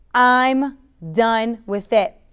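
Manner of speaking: loud, very slow, powerful proclaiming delivery. Showing viewers how to declare it: saying it loud. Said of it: "Say it loud".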